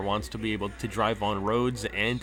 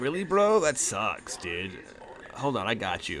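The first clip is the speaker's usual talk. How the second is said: put-on laid-back stoner-bro talk. Narrator voicing an apartment resident answering the buzzer, stoner dude voice. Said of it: "it's like some kind of like stoner dude".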